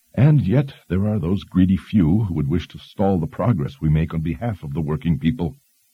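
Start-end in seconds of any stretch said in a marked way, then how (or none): none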